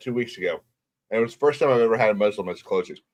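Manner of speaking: low, soft talk through a mouthful, chewing. Speaking to others in a group conversation, talking with mouth full. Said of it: "What are you saying with your mouth full?".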